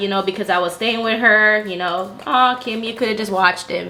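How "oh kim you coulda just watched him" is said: ordinary talk, nothing marked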